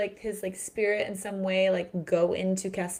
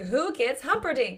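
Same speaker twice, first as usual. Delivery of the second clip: put-on screaming child voice, higher; 5 semitones higher than usual. Quoting a little boy from a film who is screaming: imitating the Princess Bride boy screaming. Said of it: "the little boy in The Princess Bride who is screaming".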